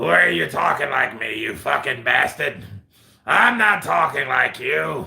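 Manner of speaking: gruff, grating, rough and creaky rasp. Asked to interview Bob Arum, answering in his voice: Bob Arum impression. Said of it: "interview Bob Arum".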